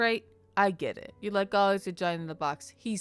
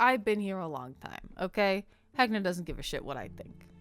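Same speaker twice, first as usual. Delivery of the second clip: offhand, dismissive, brushed-off tone. Voicing a character who rolls her eyes and answers: eye-rolling dismissive character line. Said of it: "she rolls her eyes and she says".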